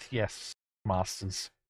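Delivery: whispered, hushed, barely audible mutter. Narrating a cowed character's reply to the group, muttered under breath. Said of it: "mutters under his breath".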